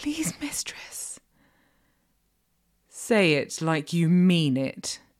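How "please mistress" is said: high, slow, timid, submissive whisper. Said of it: "Please what?".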